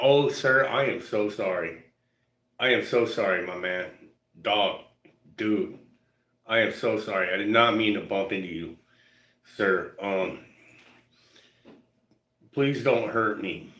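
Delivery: mock frightened, slow, nervous, over-apologetic pleading. Retelling how people who bumped into him apologized: imitating a nervous apology. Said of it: "they're like".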